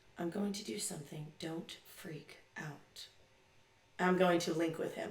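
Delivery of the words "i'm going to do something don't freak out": barely audible murmur under the breath. Speaking in character to a figure whose boot is off: under the breath. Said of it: "very under my breath be like".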